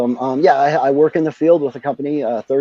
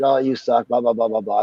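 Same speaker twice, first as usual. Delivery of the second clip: mock snotty, sneering tone; 3 semitones lower, 4 dB quieter than usual. Imitating a band that complains about the sound: imitating a snotty band. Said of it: "as long as they're not snotty about it".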